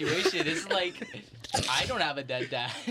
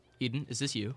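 imitated most serious tone; 3 dB quieter than usual. Retelling how dad asked about the video: imitating dad, most serious tone. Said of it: "in the most serious way possible".

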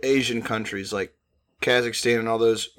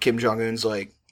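ordinary talk, nothing marked

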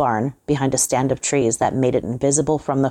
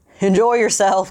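put-on high, crowing, cackling old man voice; 7 semitones higher, 4 dB louder than usual. Reading a story, the old man locks Johnson in, cackling. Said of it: "cackled the old man".

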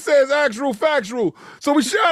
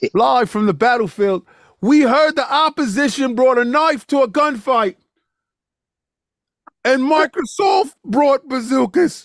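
put-on British accent. Answering a call for a report from the battlefield, put-on British accent. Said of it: "It's like British accent today".

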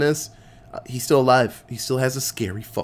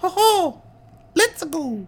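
put-on cartoon voice, much higher pitch. Discussing who voices Mario, showing how the voice goes: Mario voice. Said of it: "that Mario voice just goes".

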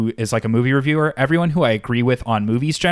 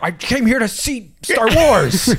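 mock very high, drawn-out, nerdy angry shout; 10 semitones higher than usual. Acting out an angry Star Wars fan at the movie: mock yelling. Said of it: "You're yelling".

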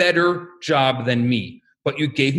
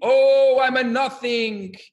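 high-pitched scream; 7 semitones higher than usual. Telling a shtetl story, act out a yeshiva student late at night in the study hall, imitating his screaming. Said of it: "sitting on either ends of the study hall screaming".

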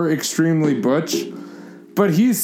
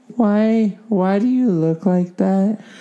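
put-on little girl voice, much higher; 2 semitones higher than usual. Asking questions as instructed, in a little girl voice. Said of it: "Ask any question like you're a little girl".

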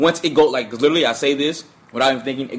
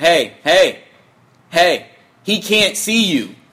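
put-on loud shouted call; 4 semitones higher, 4 dB louder than usual. Retelling his reply to a girl shouting at a performer, retelling his own yell. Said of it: "I yell out".

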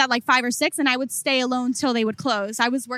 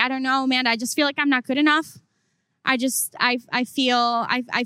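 ordinary talk, nothing marked

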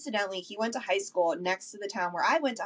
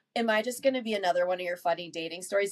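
plain

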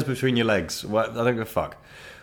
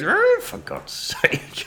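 very slow, dragged-out, drawn-out delivery. Retelling hearing the dad mutter in his chair during the kiss: imitating his dad. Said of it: "and he goes".

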